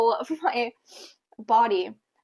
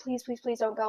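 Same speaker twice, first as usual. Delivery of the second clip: mock imploring, begging voice, repeated; 8 dB quieter than usual. Retelling a night before giving birth to an ex: imitating own begging. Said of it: "I was begging him".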